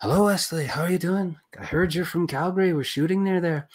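bad soft Irish accent. Quoting a man who walked in and greeted him: bad soft Irish accent. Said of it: "In his soft, wilting Irish accent, which I'm doing a bad job of".

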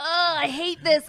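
put-on exasperated ranting. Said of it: "I was like".

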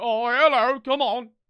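put-on slow old British man voice. Describing dog show handlers, speaker does an old British man impression. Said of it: "some like old British fuck like this guy".

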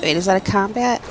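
usual speaking voice

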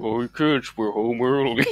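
very low, deep, voice-changer-like dropped voice. Joking that the other speaker's microphone is a Talkboy: Talkboy voice. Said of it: "Are you using a talk boy?".

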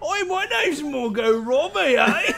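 vague, unsure fake Australian accent. Showing how you guess australian people sound, without really knowing, in an unsure put-on australian accent. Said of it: "I don't know what Australian people sound like".

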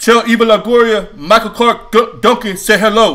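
loud, booming, very high-pitched shout. Retelling what a man running with a German Shepherd said, do Michael Clark Duncan's really loud booming voice. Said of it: "this really loud booming voice go".

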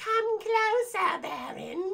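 put-on very high, eerie, creepy witchy girl voice. Retelling a movie scene where a girl lures a baron: imitating a creepy witch-like girl. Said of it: "she sounds like, ew, sounds creepy. I guess like a witch".

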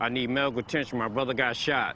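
plain

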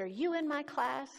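play-acted, loud, high, short-tempered angry outburst. Retelling how a teacher confronted a gang member at her class: retelling a short-tempered outburst. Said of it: "her short temper erupted".

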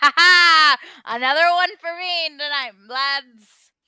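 very loud, rowdy, booming, drawn-out hearty laugh. A gentleman who just took the whole pot at cards crows to the lads, boisterous laughing. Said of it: "Very boisterously is laughing".

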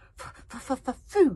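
loud, high, excited whimper. Narrator reading a story, Toothless smells food, Toothless whimpering with excitement. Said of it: "said Toothless with little whimpers of excitement".

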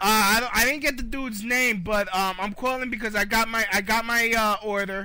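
mock-angry belligerent voice. Calling a restaurant about a delivery order, as a put-on angry customer caller.

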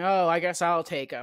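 plain

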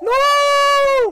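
high, loud, anguished cry.

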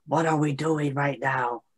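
whispered line, softly spoken. Voicing a character who quietly asks the others what they are doing: whispering. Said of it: "and whispers".

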